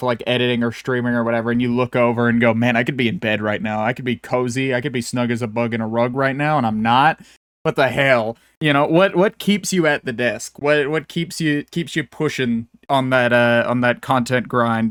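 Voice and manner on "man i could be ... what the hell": usual speaking voice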